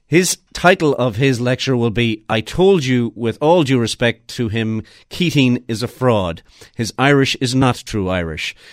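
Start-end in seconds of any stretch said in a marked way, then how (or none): none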